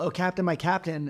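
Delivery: ordinary delivery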